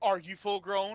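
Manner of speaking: joking, swaggering delivery. Voicing a character teasing another about height: joking cocky tone. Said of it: "as he says in, like, a joking, uh, cocky tone".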